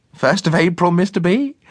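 very high-pitched, quavering, trembling voice. Narrator voicing a woman speaking to a man over his egg: trembling voice. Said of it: "in a trembling voice".

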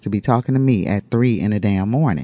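ordinary delivery

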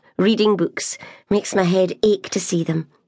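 plain

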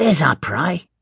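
whispering sharply. Narrating a story, one character pushes another into an alley: sharp whisper. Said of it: "he whispered sharply".

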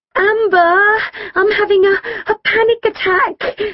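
very high, drawn-out, startled yelping cry. Kim, swaying side to side, answers amber, yelping. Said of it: "she yelped".

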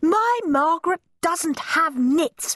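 piercing, very high, indignant shriek. Narrator voicing a mother bursting into a classroom with other parents: shrieked. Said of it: "shrieked Moody Margaret's mother".

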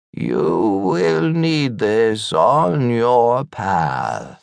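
rasping, mysterious, otherworldly voice. Reading a story, voice an old man sitting up as if possessed: mysterious raspy voice. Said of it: "says in a mysterious, raspy voice".

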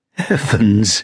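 high, gasped exclamation sounding relieved. A woman reacts on seeing the figure, gasping. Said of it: "she gasped".

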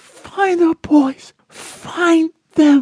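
very high, frightened, fear-laced tone. Stuck in a jammed seatbelt, she speaks to Randy in a high, fear-laced tone. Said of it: "Her voice took on a high, fear-laced tone".

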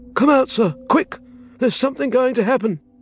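sharp, scared butler voice, very high frightened cry. Reading a butler's sudden call after an hour of silence; sharp and frightened. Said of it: "the old butler's voice came sharp and frightened".

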